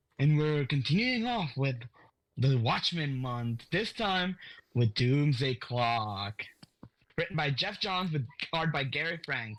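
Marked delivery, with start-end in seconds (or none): 3.7-6.4 eerie, ominous, ooh-spooky delivery. Announcing the title of the comic being discussed, spooky delivery. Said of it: "why did you say it like Doomsday Clock?".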